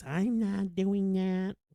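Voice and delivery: whiny complaining voice, high and drawn-out. Retelling an overheard couple bickering, the speaker voices the woman refusing: imitating her whiny voice. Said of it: "her whiny voice".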